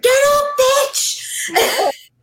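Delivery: mock sudden, very high, loud yell. Retelling a theater student shouting at a movie screen: imitating someone shouting. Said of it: "suddenly just shouts at the screen".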